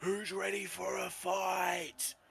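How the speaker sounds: raw, rough, very high shout. A player describes their character walking in and calling to the crowd, shouting out. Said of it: "I'm gonna shout out".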